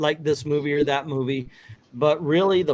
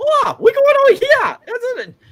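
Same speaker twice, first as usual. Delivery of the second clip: shrill, very high, loud, swooping voice; 9 dB louder than usual. Imitating the Thai dub voices in the movies: high-pitched Chris Tucker-like voice. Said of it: "really high pitched".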